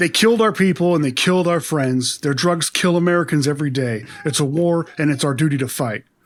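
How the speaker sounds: level, flat, expressionless, droning monotone. Recapping a movie, the speaker quotes a line of Jake's: Jake's flat monotone. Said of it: "In about that same monotone".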